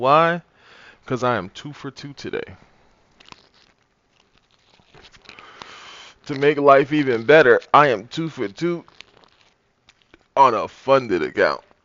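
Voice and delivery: very loud, very happy, excited voice. Greeting the audience, the speaker explains why, in a happy voice. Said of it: "As you can hear in my voice".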